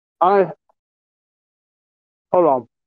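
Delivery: speaking with a mouthful of food. Pausing mid-conversation while eating: talking with mouth full. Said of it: "Got a mouthful of food right now".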